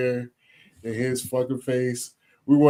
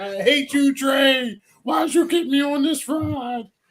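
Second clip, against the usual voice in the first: very high, long-stretched, complaining yell; 13 semitones higher than usual. Retelling how he reacted at the end of the ride, imitating someone yelling. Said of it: "Like he was yelling".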